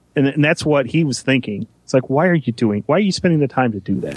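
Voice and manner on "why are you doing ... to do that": ordinary talk, nothing marked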